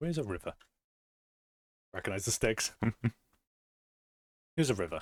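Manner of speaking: talking while chewing, mouth full of a sweet. Mid-game with others, chewing on a sweet; talking while chewing. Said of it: "I'm chewing on a sweet".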